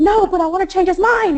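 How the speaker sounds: high, loud, insistent pleading tone.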